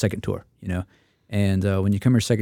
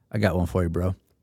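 put-on monotone deadpan, much lower pitch; 2 semitones lower than usual. Retelling what Jason Gelfand said to him, in Jason Gelfand monotone deadpan. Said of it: "looks at me in his absolute Jason Gelfand monotone deadpan and just says".

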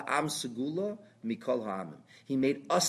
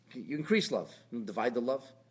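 ordinary talk, nothing marked

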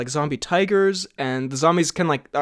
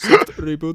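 odd, weird put-on Russian accent; 5 dB louder than usual. Joking about a movie trailer, saying the phrase in a weird Russian accent. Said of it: "becomes like weirdly Russian or something".

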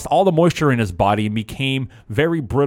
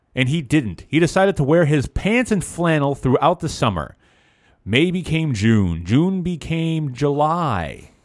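normal talking voice

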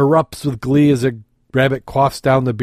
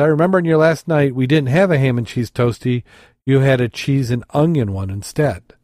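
ordinary delivery

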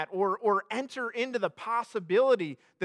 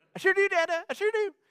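tiny chipmunk voice, much higher pitch; 10 semitones higher than usual. A father imitates his little girl answering him, in a little chipmunk voice. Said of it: "she's got like this little chipmunk voice".

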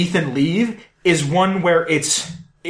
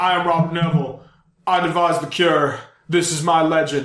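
grand, pompous, self-important delivery. Retelling the movie's alternate ending, imitating a pompous speech. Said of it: "now you sound like a pompous fuck".

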